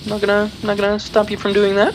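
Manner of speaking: high, fast, goofy put-on voice. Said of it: "Don't know why I'm talking like this".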